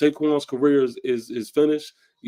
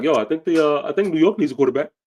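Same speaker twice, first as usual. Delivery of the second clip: mocking, needling, dry sarcastic tone; 4 semitones higher, 4 dB louder than usual. Retelling what a player said with a smirk: imitating sarcastic remark. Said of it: "Saquon Barkley sarcastically is like".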